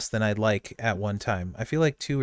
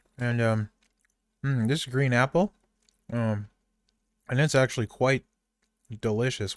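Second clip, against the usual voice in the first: speaking with mouth full while chewing. Tasting a handful of candies and describing the flavor, talking while chewing. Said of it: "I'm chewing".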